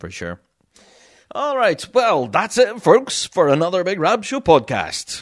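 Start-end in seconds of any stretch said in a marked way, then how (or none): 1.3-5.2 radio announcer voice, pitched up. Signing off the podcast episode to listeners in a radio voice. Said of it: "I can put on my radio voice".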